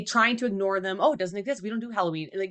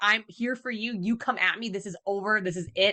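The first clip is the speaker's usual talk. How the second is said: acted determined, defiant tone. Describing a screaming woman, the speaker voices her stand, imitating a determined challenge. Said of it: "Like she's determined".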